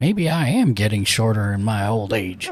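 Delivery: very low muttering mumble under the breath. Voicing a character thumbing through a book, mumbling to himself. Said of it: "you hear him mumbling to himself".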